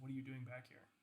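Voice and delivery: fast, very soft half-whisper through held-back tears. Describing a scene, the speaker voices a woman half-whispering into the ear mic: tearful half-whisper. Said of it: "in like a tearing voice, um, she she just whispers into your ear".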